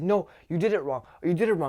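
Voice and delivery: play-acted rushed, frantic, needy, high voice. Retelling a customer's complaint at the register: imitating a frantic customer. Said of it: "he got so frantic".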